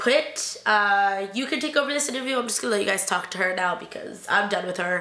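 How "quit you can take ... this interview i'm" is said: plain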